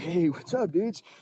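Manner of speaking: dumb surfer dude voice. Recalling coming into auditions barefoot for producers, doing a dumb surfer dude voice. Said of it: "this guy like he was in a surfer dude idiot barefoot".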